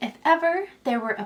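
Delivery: plain reading voice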